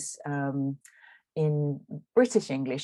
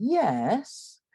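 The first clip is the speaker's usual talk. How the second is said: "yes" dips then climbs, fall-rise; 8 semitones higher than usual. Illustrating an English intonation pattern rarer in American English: fall-rise on 'yes'. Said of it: "is called the full rise. So it's something like".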